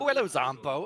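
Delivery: put-on West Country accent. Retelling greeting a zombie in a game: imitating own West Country accent. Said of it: "a West Country accent".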